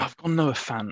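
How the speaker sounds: pained, aching tone, sounding like it hurts. Answering which tight end was picked: sounding in pain. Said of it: "You said that like you were in so much pain".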